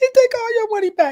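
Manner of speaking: put-on crying. Retelling how they react to tough weave customers: imitating own crying. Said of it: "I be crying".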